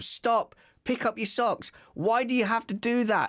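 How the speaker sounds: high, escalating nagging parent voice.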